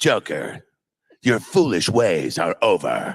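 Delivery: heavy, adenoidal, nasal, heroic superhero delivery. Showing how Diedrich Bader sounded as Batman: Diedrich Bader's Batman voice. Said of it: "Diedrich sounded like this".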